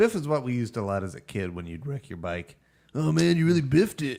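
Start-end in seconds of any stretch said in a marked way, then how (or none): 2.9-4.2 put-on stoner slacker voice. Showing how kids said biff, in Otto from The Simpsons voice. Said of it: "You sound like Otto from The Simpsons".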